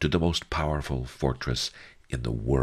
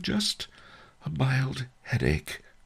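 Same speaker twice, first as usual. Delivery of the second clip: small, very high, terrified, frightened squeak; 11 semitones higher than usual. The narrator answers the Duke's question, in a tiny, terrified voice. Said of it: "I said in a tiny, terrified voice".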